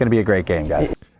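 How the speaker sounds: level, flat delivery with zero enthusiasm. Announcing tonight's game as a great one, not excited at all. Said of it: "you sound so excited. Not at all".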